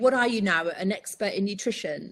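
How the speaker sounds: dry, mocking, sarcastic put-down. Recounting a skeptical man reacting to talk of the carnivore diet: imitating a sarcastic remark. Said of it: "And just very sarcastic".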